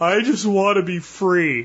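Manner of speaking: mock, almost whimpering voice. Retelling what he said next day in the garage, imitating his whimpering. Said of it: "like almost like whimpering".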